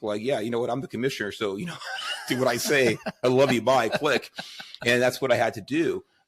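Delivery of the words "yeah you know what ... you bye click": mocking, sarcastic delivery with laughter. Retelling how the commissioner ended their arguments: imitating Warren sarcastically.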